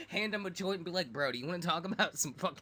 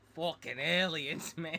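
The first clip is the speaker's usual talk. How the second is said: put-on Boston accent. Joking about a movie character who says the line: put-on boston accent. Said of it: "from Boston or something".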